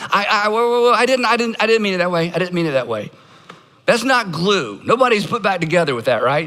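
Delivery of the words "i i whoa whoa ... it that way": flustered, defensive, stammering, tripping over words. Acting out someone excusing hurtful words: imitating a defensive excuse-maker. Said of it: "We immediately retreat to intent".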